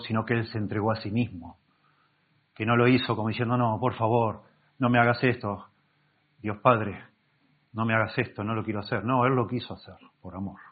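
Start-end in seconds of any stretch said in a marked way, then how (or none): none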